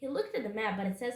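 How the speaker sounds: ordinary delivery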